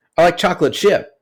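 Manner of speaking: fond, happy, high pitch. Imitating someone answering a question about their favorite cookie, higher pitch. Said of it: "it's higher in pitch".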